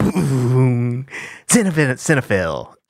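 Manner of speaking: narrator voice like an announcer.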